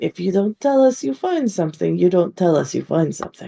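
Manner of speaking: close, hushed, leaning-in half-whisper in character voice. Acting out a character who leans in to the others: half-whispering in character. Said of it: "lean in and whisper and be like".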